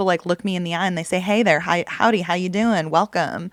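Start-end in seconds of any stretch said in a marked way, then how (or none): 1.2-3.5 put-on Texas accent, much slower. Quoting friendly locals greeting passersby on the street, in a texas accent. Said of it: "now my Texas accent is like coming out".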